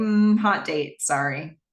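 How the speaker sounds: usual speaking voice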